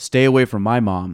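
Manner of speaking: flat, dead flat deadpan delivery. Retelling a scene where Kevin Malone walks in on another character, Kevin Malone deadpan voice. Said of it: "in his kind of deadpan voice says".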